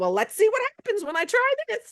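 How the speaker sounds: put-on high, thick, lilting, sing-song Jamaican accent. Imitating an eighty-four-year-old woman from class, in a thick Jamaican accent. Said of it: "in her thick Jamaican accent".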